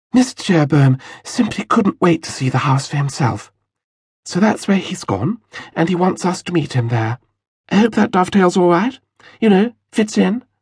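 light lisp, enraptured tone. Narrator reads Mrs. Jerobeam's line, lisping again with a hint of rapture. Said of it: "Lisping again, Mrs. Jerobeam said with a hint of rapture".

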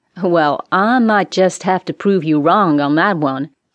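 scornful, mocking, contemptuous sneer. A man answering a woman who asks to see the captain, sneering. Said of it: "he sneered".

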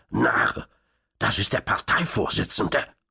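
spiteful, malicious, vicious hissed delivery. As Krakowitsch takes the phone receiver, the agent speaks: hissing maliciously. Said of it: "zischte der Agent bösartig".

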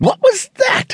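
very high, breathy, panicked voice. Hearing glass shatter from the boys' room, she asks; breathed in panic. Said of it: "she breathed".

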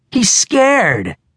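triumphant, gloating crowing, very high pitch. [name], speaking in front of Russell and Luke, crowing. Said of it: "[name] crowed".

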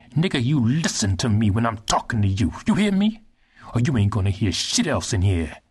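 enraged, unhinged, psychotic, furious menacing rage. The young general, angered by the silent prisoner, speaks angry like a psychopath. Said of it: "became angry like a psychopath".

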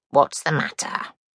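tiny, small, croaking little creature voice. A narrator reads a small voice asking the crying princess; small croaking voice. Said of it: "A small voice croaked".

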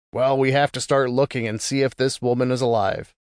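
ordinary delivery, nothing marked

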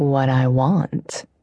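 purring. A man speaks to the narrator while holding her jaw, purring. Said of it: "he purred".

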